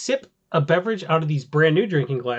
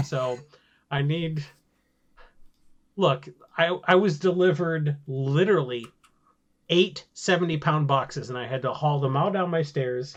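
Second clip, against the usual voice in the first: ordinary talk, nothing marked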